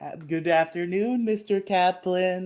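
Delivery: put-on eerie, slow, high creepy children's voices in unison. Retelling students greeting their teacher, imitating creepy movie orphans greeting. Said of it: "like a fucking orphanage from, like, a creepy movie".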